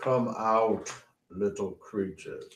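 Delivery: deep giant voice calling out. Voicing a voice booming from outside the cave: deep booming voice. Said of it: "you hear a deep booming voice".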